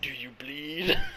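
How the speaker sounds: low, sinister put-on evil villain voice. Recalling Superman turning evil, the speaker quotes him in a mock-evil Superman voice. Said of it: "he said it in an evil voice too".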